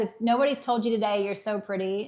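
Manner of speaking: ordinary talk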